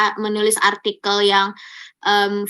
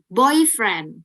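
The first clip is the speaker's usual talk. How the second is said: put-on boyfriend with stress on first syllable boy. Explaining how stress changes a word's meaning: stress on boy in boyfriend. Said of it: "di awalnya".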